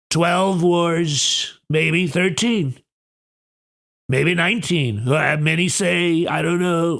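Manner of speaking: strained, throat-scraping put-on voice, "wars" drawn out. Doing a voice the speaker says scratches the throat, strained put-on impression voice. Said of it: "I can't do that voice anymore without scratching up my throat".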